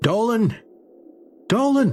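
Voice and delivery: shouting. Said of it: "And now I yell".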